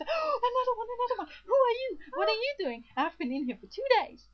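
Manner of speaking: very high, loud, eager, excited bug chatter. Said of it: "the other bug ... falls in and goes".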